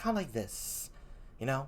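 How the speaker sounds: soft, gentle, hushed voice, nearly whispered. Reading Hamlet aloud and showing how the Queen sounds, in a soft voice. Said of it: "I gave the Queen sort of a soft voice".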